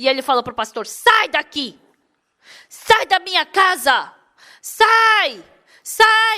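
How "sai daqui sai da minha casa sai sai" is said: put-on furious angry yelling, very slow and drawn out. Retelling a man ordering the pastor out: imitating an angry man shouting. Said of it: "E ele ficou muito bravo".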